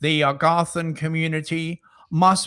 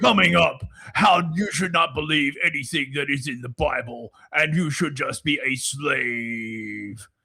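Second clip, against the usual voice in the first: put-on demon voice in podcaster style; 2 semitones lower than usual. Answering a request for a demon podcaster impression: demon podcaster impression. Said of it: "Can we get [name]'s demon podcaster impression?".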